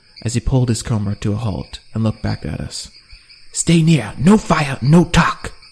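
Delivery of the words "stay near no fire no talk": deliberate, loud, slow barked delivery. Narrating a story, read the guide's order to the travelers as he halts them, barked. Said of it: "trying to mimic [name]'s accent and facial expression".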